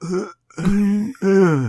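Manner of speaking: disappointed grunts, pitched a bit high. Asked to voice disappointment in a Marlon Brando type voice. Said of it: "express your disappointment in a Marlon Brando type voice".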